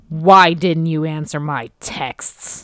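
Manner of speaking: harsh, very loud, stern scolding tone. Reading out a line after the other speaker asks for it: really stern. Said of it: "Say that really stern".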